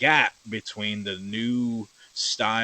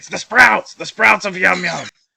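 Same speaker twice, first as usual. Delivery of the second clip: mock yelling, higher, louder, slower; 9 semitones higher, 13 dB louder than usual. Speaker retelling their reaction to a Patreon video, retelling yelling at the TV. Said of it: "I'm like yelling at the TV".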